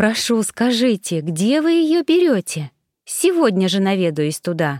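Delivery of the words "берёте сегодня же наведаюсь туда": ordinary delivery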